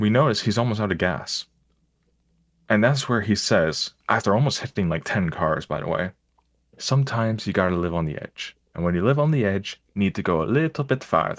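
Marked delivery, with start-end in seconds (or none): 6.8-11.4 put-on Jamaican accent. Quoting a taxi driver while retelling a ride: imitating a Jamaican accent. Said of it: "You fucking went to the accent".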